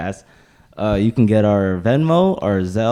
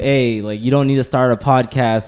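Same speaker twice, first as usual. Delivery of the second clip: usual speaking voice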